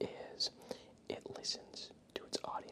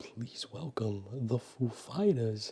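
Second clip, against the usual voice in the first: very loud, put-on bellowing voice. Imitating an SNL band introduction: Christopher Walken impression. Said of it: "that was my sick, sickly impression of Christopher Walken".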